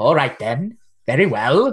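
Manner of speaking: put-on creature voice. Voicing the Kappa agreeing to help, as a player asked: Kappa voice. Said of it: "do your Kappa voice".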